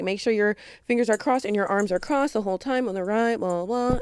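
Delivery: put-on casual, nonchalant tone. Retelling the ride instructor's safety rules: imitating someone sounding nonchalant. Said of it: "he's running through it so nonchalant".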